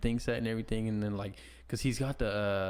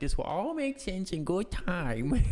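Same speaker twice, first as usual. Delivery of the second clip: tiny, small, high put-on little voice; 8 semitones higher than usual. Retelling what he said on Saturday Night Live, in a small little voice. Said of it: "Like in his little voice".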